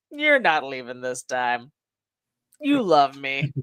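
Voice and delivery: acted smug, self-assured, cocky tone, very low pitch. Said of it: "the cockiness of this man".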